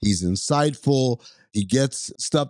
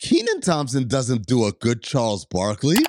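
ordinary delivery

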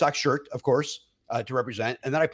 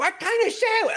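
put-on yelling, much higher pitch. Retelling how a girl ordering at the counter yelled to her friend, imitating someone yelling. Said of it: "Like at the top of her lungs".

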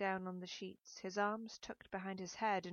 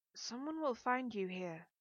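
trembling, shaking, unsteady voice; 3 semitones higher than usual. The narrator, being kissed by a man, answers in a shaking voice. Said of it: "I said in a shaking voice".

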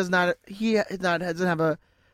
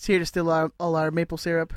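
ordinary talk, nothing marked

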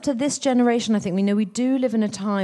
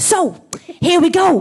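put-on upbeat, high, loud, excitable children's TV presenter energy; 8 semitones higher, 7 dB louder than usual. Describing a very excitable man, the speaker imitates him: children's-tv-presenter energy. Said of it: "he's got the energy of like a children's TV presenter".

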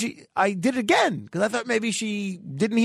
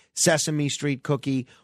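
ordinary delivery

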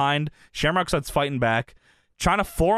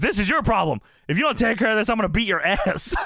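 put-on angry, menacing voice, higher pitched; 5 semitones higher than usual. Retelling a fight story where Shamrock threatens Triple A, mock-angry Shamrock threat. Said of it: "Shamrock is angry about this".

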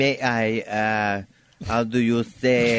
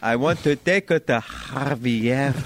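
put-on Spanish accent throughout, one name stretched; 2 semitones higher than usual. Acting out a latin pickup line on request: put-on spanish accent. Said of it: "You wanted Spanish, I gave you Spanish".

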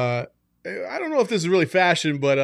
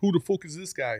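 terrible, fake, worst-sounding Scottish accent; 2 semitones higher, 5 dB quieter than usual. Imitating McGregor at a post-fight press conference: worst Scottish accent. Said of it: "that was the worst Scottish accent of all time".

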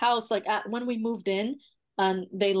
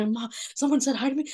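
mock-panicked hyperventilating, higher and faster; 4 semitones higher than usual. Retelling running upstairs to their mom after a scare, acting out hyperventilating. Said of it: "I'm hyperventilating".

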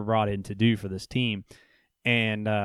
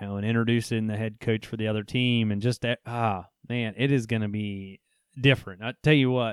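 normal talking voice

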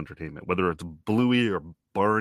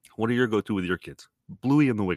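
put-on New York tough-guy accent; 3 semitones higher than usual. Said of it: "I don't know why I'm suddenly becoming De Niro".

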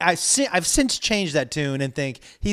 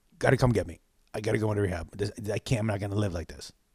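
nervous, very low and hushed voice; 8 semitones lower, 6 dB quieter than usual. Retelling a friend's phone call to him, imitating a nervous friend. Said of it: "but it was he was nervous".

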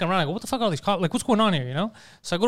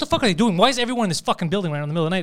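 put-on agitated, worked-up, demanding tone. Retelling own words on seeing cops in the building: imitating own agitated voice. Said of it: "And I was agitated 'cause I'm like".

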